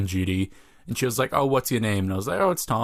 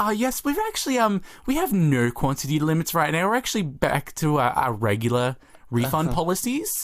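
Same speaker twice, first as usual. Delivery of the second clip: higher, professional customer service voice; 6 semitones higher than usual. Retelling answering a customer's question about refund policies, customer service voice. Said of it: "my customer service voice was like".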